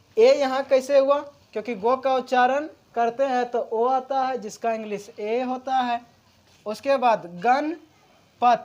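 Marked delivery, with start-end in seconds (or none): 7.5-8.7 slow, with pause between gan and pat. Explaining pronunciation of a name, with a pause after 'gan'. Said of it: "गण के बाद कुछ देर विराम हो जाता है".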